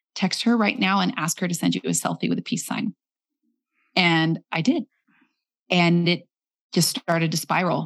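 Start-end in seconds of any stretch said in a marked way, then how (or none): none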